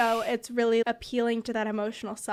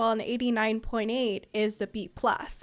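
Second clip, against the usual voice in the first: plain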